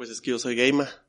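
usual speaking voice

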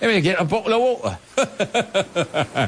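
British accent. Demonstrating how a Brit would ask for a bottle of water: British accent. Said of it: "I'll say it like a Brit".

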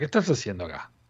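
deep, very low, soft, hushed authoritative scolding. Retelling how a voice asked a man what he was doing there, imitating an authoritative scolding voice. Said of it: "dice una voz medio como autoritaria".

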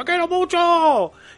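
play-acted very high, pleading, desperate cry. Retelling what a man on a sand pile kept telling a woman, imitating a desperate man. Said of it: "Muy desesperado".

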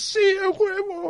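high, slow, excited a huevo. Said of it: "pero por dentro".

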